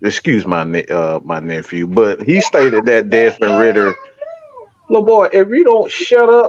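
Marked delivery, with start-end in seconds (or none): 4.9-6.5 scolding telling-off tone, higher. Interrupting a talk to tell off a nephew in the room: scolding a child. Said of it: "why you talking to Deuce Vaughn like that?".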